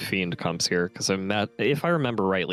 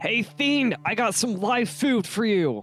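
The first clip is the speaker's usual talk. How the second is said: shouting in a put-on voice; 14 semitones higher than usual. Voicing a character calling out to a Fiend: shouting in character. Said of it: "Renan is gonna shout".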